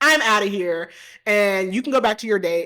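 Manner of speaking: curt, cutting, snappy tone. Retelling a movie scene where a woman confronts a man, imitating her snapping at him. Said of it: "she just starts snapping at him".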